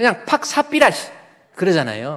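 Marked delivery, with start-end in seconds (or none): 0.0-1.1 very high, mock Gyeongsang dialect. Joking that the name Sapphira sounds like dialect: put-on Gyeongsang dialect. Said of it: "경상도 사투리로".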